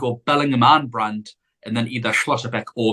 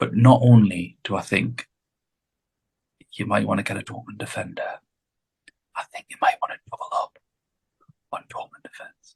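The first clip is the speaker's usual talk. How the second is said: hushed, quiet whisper under the breath; 3 semitones lower than usual. Admitting an unpopular tip to Aaron and the listeners: whispering. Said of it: "So I'm gonna come in and whisper it".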